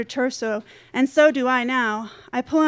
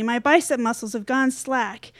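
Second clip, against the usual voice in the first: ordinary delivery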